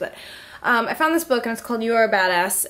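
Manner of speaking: winded, out of breath. Just ran up the stairs, telling about a book they found, out of breath. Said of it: "I'm out of breath because I just like ran up the stairs".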